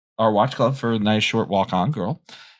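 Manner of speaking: ordinary talk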